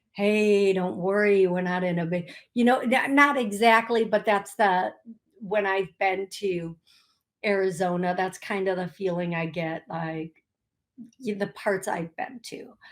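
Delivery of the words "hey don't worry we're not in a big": put-on, mellow, calm, easygoing tone. Comparing city energies, acting out Arizona: imitating mellow kumbaya energy. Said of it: "it's gonna be the kumbaya energy".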